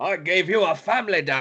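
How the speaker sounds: high scolding voice. Joking about a proper burial with the other speaker: Professor X impression. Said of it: "nothing but Professor X impression".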